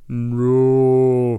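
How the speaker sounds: drawn-out, slow-motion scream on "no". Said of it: "it would sound like".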